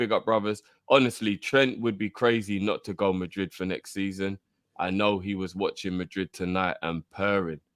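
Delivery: plain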